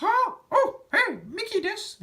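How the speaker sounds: very high cartoon voice, slow and swooping. Showing the Japanese version of Kingdom Hearts, do a Japanese Mickey Mouse voice. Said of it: "what Mickey Mouse sounds like in Japanese".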